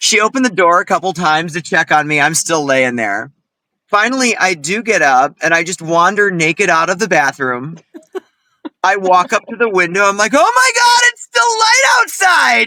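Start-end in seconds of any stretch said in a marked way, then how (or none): 10.3-12.7 very high, shouting, overjoyed and thrilled outburst. Speaker retells getting up and walking to the window; retelling own excited exclaim. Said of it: "I'm so excited because it's still light out".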